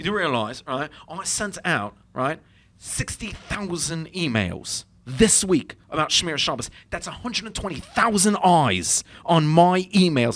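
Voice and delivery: put-on English accent. Retelling what a guy said while they were debating: imitating an English accent. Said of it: "he was actually English, so I'm gonna do the".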